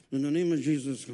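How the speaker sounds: put-on mumbled whisper. Retelling walking by and praying quietly: imitating a mumbled whisper. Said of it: "I whispered it and mumbled it".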